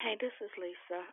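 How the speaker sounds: very hushed, very quiet, high, soft little voice. Introducing herself when the host asks if anyone else wants to speak, soft voice. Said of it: "your little soft voice".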